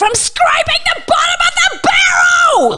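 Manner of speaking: furious scream, very high and drawn out. Retelling an actor screaming at them during a script run-through: imitating someone screaming. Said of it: "just screamed, screamed at me".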